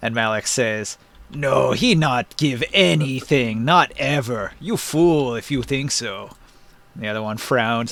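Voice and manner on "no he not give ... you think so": slow, lumbering, hulking giant voice. Voicing giant Malik answering the other giant: giant Malik voice. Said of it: "different voices for each one".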